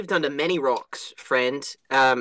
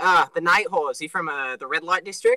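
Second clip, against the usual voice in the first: ordinary delivery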